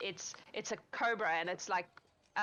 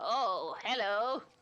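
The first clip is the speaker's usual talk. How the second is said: little goblin character voice, higher pitch; 3 semitones higher, 4 dB louder than usual. Voicing a very little goblin who looks up and greets the player: little goblin voice. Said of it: "he looks up at you like this, and he goes".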